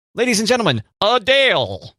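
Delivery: high-pitched show announcer voice.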